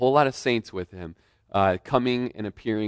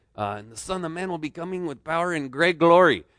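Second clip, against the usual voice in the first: put-on thick Spanish accent, raised pitch, preaching delivery; 7 semitones higher than usual. Recalling a radio preacher's sermon, in Raul Reese's thick Spanish accent. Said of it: "He's got this really thick Spanish accent".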